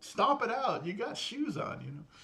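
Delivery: play-acted, high-pitched, frustrated shouting. Retelling yelling at a man on the screen: imitating own yelling at screen. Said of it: "I'm yelling at the guy".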